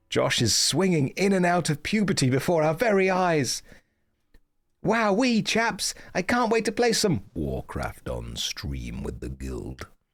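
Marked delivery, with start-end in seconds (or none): 4.8-9.8 sing-song, put-on British accent. On stream, after viewers remark on sounding british: put-on british accent. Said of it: "I can't believe you sound so British".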